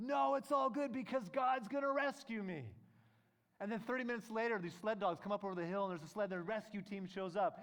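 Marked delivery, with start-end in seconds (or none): 0.0-2.6 high, loud scream at full pitch. Telling a story of a man refusing rescue, retelling his scream at the pilot. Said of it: "He's screaming at the pilot".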